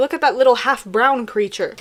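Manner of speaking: ordinary delivery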